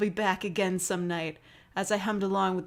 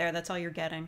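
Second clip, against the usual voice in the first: ordinary delivery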